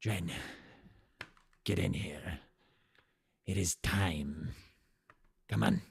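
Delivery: rough-edged yet easygoing, light voice. Voicing a character who calls another in for a meeting, gruff but light voice. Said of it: "this gruff but light voice".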